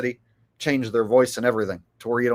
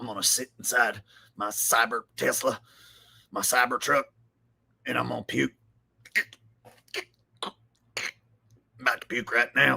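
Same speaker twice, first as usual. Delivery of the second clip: put-on tearful, ranting host voice, quieter; 6 dB quieter than usual. Showing the new version of an Alex Jones impression. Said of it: "So new Alex Jones is like".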